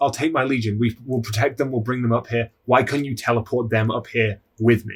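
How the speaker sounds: put-on begging, pleading voice. Retelling how Angron on his knees pleads with the Emperor: imitating Angron begging. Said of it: "He's just begging his father".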